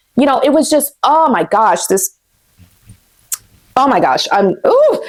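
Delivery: words breaking off, choked up, fighting tears. Describing abuse shown in a documentary, choking up and near tears. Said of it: "I'm gonna try to do this without crying".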